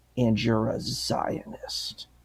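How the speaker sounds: mock whisper, slow and utterly disgusted. Retelling what a woman called the speaker, in mock disgust. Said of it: "with this like complete disgust in her voice".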